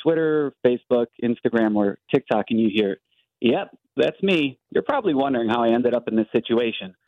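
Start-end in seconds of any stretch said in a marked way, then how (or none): none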